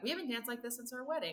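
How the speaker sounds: close, soft, hushed, intimate half-whisper. Voicing a character who half-whispers to a player while they dance: half-whispering. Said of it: "And he kind of whispers".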